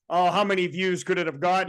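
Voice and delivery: ordinary talk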